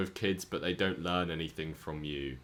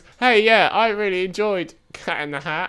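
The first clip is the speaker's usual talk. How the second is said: very high, shrill, loud, silly cat voice; 13 semitones higher, 15 dB louder than usual. Speaking for the cat Crystal after she is asked to say something, in a cat voice. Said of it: "what was my cat voice?".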